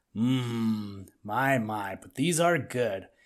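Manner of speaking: deep grumbly mumble, very slow, low, stretched "mmm". Reading a story, the narrator voices Buster eating berries: Buster's deep grumbly voice. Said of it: "he mumbled in his deep, grumbly, rumbly voice".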